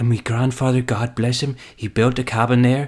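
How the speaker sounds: put-on Irish accent. Retelling a clip of an interview moment: Pierce Brosnan Irish accent. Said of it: "lapses back into his original accent".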